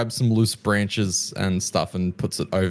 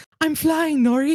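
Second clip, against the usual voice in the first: put-on woman's voice, higher. Voicing a character who pretends to fly at the front: woman's voice. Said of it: "in some woman's voice and says".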